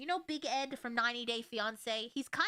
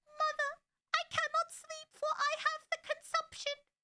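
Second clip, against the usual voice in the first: very high, put-on, old-fashioned Victorian voice. Describing a costume with a gown and candle holder, then speaking in a victorian voice. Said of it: "That's my Victorian voice".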